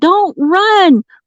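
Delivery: very high, screamed delivery. Retelling what you screamed at him, retelling a scream. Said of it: "I was screaming at him".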